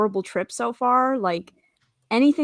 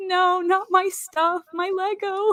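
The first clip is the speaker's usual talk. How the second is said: put-on, very high, very slow, drawn-out tearful crying; 9 semitones higher than usual. Retelling learning the suitcases were lost: retelling own tearful plea. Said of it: "tearing up".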